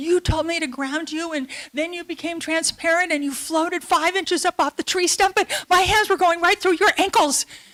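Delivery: put-on panicked yelling, very high. Speaker retells Bob yelling at them after coming back down, retelling Bob's panicked yelling. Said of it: "He's yelling at me".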